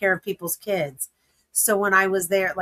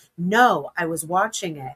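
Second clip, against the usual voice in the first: ordinary talk, nothing marked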